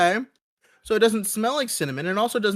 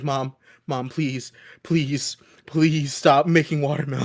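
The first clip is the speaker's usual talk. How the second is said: put-on breathless, gasping voice, lower; 6 semitones lower than usual. Retelling a past allergic reaction to family: imitating struggling to breathe. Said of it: "struggling to breathe".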